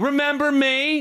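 put-on rude tone, high-pitched. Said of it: "Did they have that tone".

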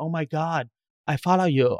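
put-on foreign accent, hard to place, maybe Italian. Telling the co-speaker about a stranger with a camera who approached them, imitating a foreign accent. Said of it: "I don't know what accent it was".

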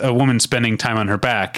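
normal talking voice

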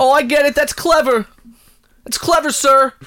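loud yelling, shouting. Reacting to the president's ice cream joke, calling him sir, yelling. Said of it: "Why are you yelling at me right now?".

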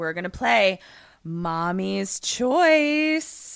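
mock-cordial, taunting, overly polite voice. Retelling how a man taunts a family, imitating an overly cordial tone. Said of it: "speaking in sort of an overly cordial tone".

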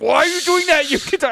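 put-on angry raspy whisper. Speaker retells her getting pissed off when they whispered back, imitating a pissed-off hoarse whisper. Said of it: "she got so pissed off at me because like she would like could like whisper hoarsely".

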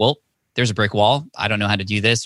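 ordinary talk

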